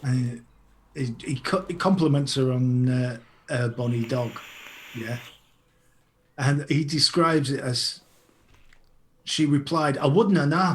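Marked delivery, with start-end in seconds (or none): 10.0-10.8 bad Glasgow Scottish accent, pitched higher. Reading out a Glaswegian-dialect story quote: crap Scottish accent. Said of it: "I do a crap Scottish accent".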